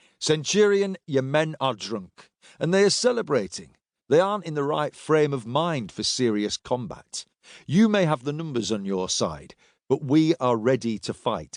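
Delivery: ordinary delivery, nothing marked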